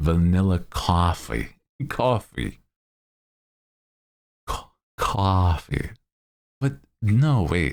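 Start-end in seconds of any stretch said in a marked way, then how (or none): 0.0-5.9 put-on New York accent, heard on "coffee". Greeting a guest and playing with their name in a new york accent. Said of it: "say your name in like a New York accent".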